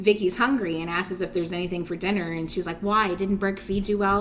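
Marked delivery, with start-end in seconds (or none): none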